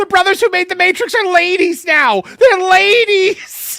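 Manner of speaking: shrill, very high, very loud running holler. Retelling Peter from Family Guy running down the street: Peter Griffin yelling. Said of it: "him running down the street going".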